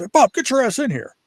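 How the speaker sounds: shrill, high, shouted yell. Retelling how a man called him into an office: retelling a yell. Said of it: "he just yelled at me".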